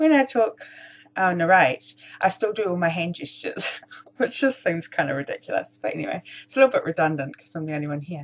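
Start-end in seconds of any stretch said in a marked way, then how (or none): 0.0-5.8 chuckling, self-amused, laughing through the words. Narrating a paper craft alone, amused at own hand gestures: laughing while talking. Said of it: "I'm just laughing at myself".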